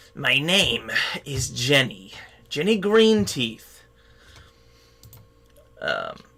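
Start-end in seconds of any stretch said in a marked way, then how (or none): 0.2-3.7 put-on old hag voice. Voicing a hag who introduces herself to the players: Jenny Greenteeth voice. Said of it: "she says".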